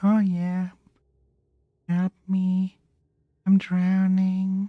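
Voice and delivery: mock calm, relaxed tone. Mocking someone who calls for help while drowning: imitating a calm voice. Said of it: "quite calm, like".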